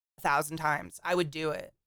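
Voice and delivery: ordinary talk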